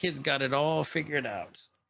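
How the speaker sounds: voice of an outlaw cowboy. Describing how an outlaw character talks, quoting him in Cad's cowboy voice. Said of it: "He's a cowboy through and through".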